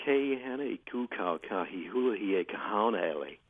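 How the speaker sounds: American-accented pronunciation. Attempting a hawaiian name in a put-on american accent. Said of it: "In an American accent, how would you pronounce this woman's name".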